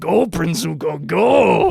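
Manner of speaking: botched rough creaky drawl, very slow and drawn out. Mocking a game voice actor's poor Uncle Iroh impression: imitating the Smite Uncle Iroh voice actor. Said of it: "he is actually going like".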